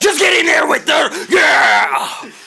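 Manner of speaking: very high-pitched, rough shout. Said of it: "I'm talking like Vince McMahon".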